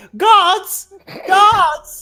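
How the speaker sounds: loud, calling-out shout. Game master voicing a character at the door: shouting for the guards. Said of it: "he shouts".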